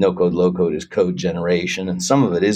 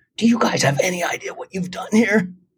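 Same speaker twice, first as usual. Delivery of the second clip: acted-out very high, shrill, demanding yell; 13 semitones higher than usual. Retelling how a doubting man came back after hours: imitating someone yelling. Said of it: "literally yelling".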